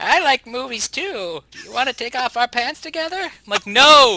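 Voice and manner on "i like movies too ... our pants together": put-on, pervy, creepy old-man voice, pitched up. A co-host on their show does a bit, creepy old guy voice. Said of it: "stop using that voice".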